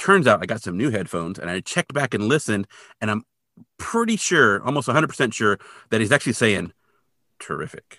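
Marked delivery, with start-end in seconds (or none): 7.4-8.0 sarcastic tone.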